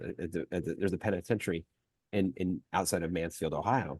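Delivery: ordinary talk, nothing marked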